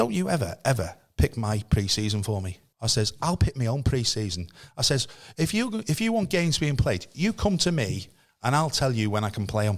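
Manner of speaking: ordinary delivery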